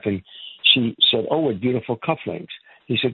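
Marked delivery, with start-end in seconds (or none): none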